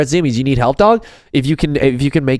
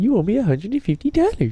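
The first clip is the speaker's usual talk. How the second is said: put-on little voice, pitched much higher; 7 semitones higher, 5 dB quieter than usual. Quoting a sitcom character's line to the other speaker, Shirley's little voice. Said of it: "she's like in her little voice".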